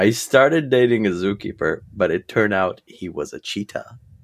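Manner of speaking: usual speaking voice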